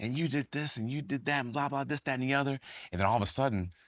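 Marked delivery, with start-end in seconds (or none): 0.0-2.6 mild, play-acted scolding rant. Retelling a coach yelling at the players after a loss: imitating a coach yelling. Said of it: "starts yelling at guys".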